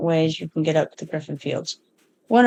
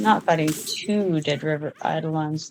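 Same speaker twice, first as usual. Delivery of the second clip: ordinary talk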